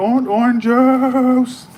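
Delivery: shrill, very high yell with juice drawn out. Retelling what a woman shouts out in public, imitating her yelling. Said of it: "Now she go".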